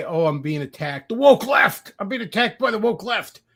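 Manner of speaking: high, whingeing, whiny complaining cry. Retelling how a commentator always complains, imitating someone whining. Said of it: "And he'd always cry".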